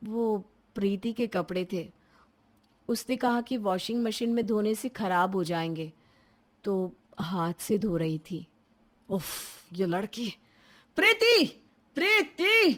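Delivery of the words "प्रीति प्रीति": very high, loud calling shout. A brother calls for his sister Preeti about her washing: shouting a name. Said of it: "क्यों चिल्ला रहे हो?".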